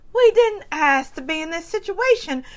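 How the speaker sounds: put-on southern voice trying British accent. Speaker imitates Dorit chiming in, Southern trying to be British. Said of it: "I did Southern trying to be British".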